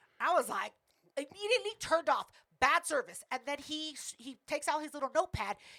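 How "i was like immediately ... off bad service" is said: plain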